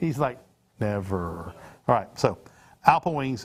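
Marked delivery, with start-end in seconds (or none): 0.8-1.5 play-acted flat, humorless deadpan, very low. Retelling what the producer said: imitating someone humorless. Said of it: "with absolutely no sense of humor in his voice".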